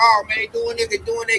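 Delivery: very high, frantic, panicked babbling chatter. Acting out what people in a frantic state will say: imitating frantic panicked talk. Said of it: "this frantic state like Ox said".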